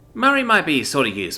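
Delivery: ordinary delivery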